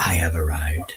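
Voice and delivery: whispered line. Acting out a character's calm, smoky arrival line: whispering. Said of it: "then whispers".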